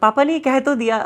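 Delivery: speaking with laughter breaking into the words. Recounting what their father once said to them, laughing while talking. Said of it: "बोलते हुए हंसी आ रही है".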